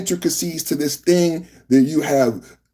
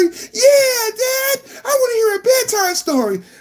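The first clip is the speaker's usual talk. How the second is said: put-on kid voice, higher pitch. Acting out a skit where kids ask Dad for a bedtime story: acting as a child. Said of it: "you wanna hear a bedtime story".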